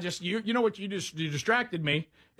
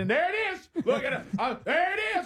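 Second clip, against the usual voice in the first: slow, drawn-out mock shout; 10 semitones higher than usual. Retelling what you started shouting in the car: retelling a shout. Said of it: "I just started shouting in the car".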